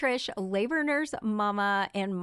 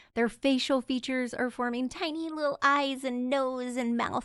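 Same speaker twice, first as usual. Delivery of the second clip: put-on babyish, cutesy little voice; 4 semitones higher than usual. Describing a fetus's forming facial features, in a baby voice. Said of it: "that's my baby voice".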